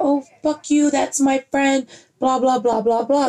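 half-hearted yell. Retelling a friend arguing with an old neighbor: imitating Angelica yelling. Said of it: "she's yelling at her".

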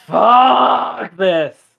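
loud, rough furious roar, "fuck" drawn out. Voicing a far-off dragon whose talk turns to a loud roar of anger. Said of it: "a really loud, just, roar of anger".

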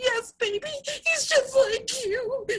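very high, teary, drawn-out blubbering. A mom retelling what she said in the theater, retelling her own blubbering. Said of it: "blubbering like an idiot in the theater".

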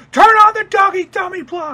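shrill, very high, loud yell. Retelling an anime scene where Gendo suddenly calls out an order: mock Gendo yelling out. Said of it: "And then he just yell out".

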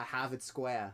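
put-on, mock Boston accent. Asked to do an accent, the speaker tries out a put-on Boston accent. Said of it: "I can do a Boston accent".

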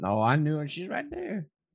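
put-on old Southern US man's accent, high and swooping. Playing a character in a bit for the others, old man southern accent. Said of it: "a cross between an old man and a southern accent".

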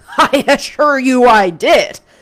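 very loud, cutting, slow sarcastic drawl. A schoolmaster answers a pupil who doubted he meant it, sarcastic inflection. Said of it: "Still with the sarcastic inflection".

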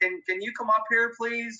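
calling out in a high voice. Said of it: "I call out the window".

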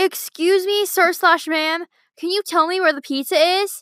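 mock fearful, mild, high half-yelled near-scream. Retelling asking strangers where the pizza is, retelling almost screaming at them. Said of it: "I would almost scream at them".

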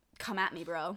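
plain

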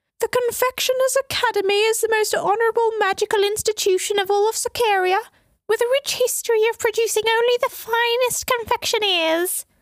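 very high, wavering, trilled falsetto. The narrator imitates an advisor for a listener: wavering falsetto Duchess Greller impression. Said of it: "I trilled in a wavering falsetto".

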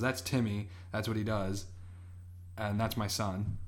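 ordinary delivery

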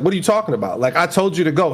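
ordinary talk

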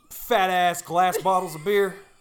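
put-on Southern accent. Retelling ordering a growler of beer: put-on southern accent. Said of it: "it was like a southern".

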